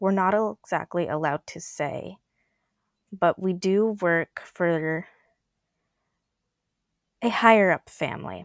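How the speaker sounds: guarded, discreet, confiding tone. A player speaks in character during a tabletop game, speaking quietly. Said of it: "leans over and speaks quietly".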